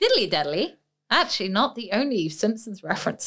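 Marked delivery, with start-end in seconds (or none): 0.0-0.8 put-on strong Australian accent. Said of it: "You went very, very Australian there".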